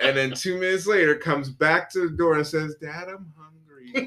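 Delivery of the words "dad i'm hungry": sweet, innocent, good-little-kitty voice. Retelling how the cat came back to the door: innocent good little kitty tone. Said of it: ""I'm just a good little kitty" tone possible".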